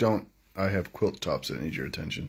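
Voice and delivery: ordinary talk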